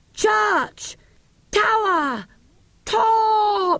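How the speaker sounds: very high, slow, loud, spaced-out shouted words. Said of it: "in his deepest voice, very slow and loud".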